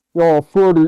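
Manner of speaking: put-on deep voice. Imitating an off-screen mom calling her son: deep voice. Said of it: "in a deep voice".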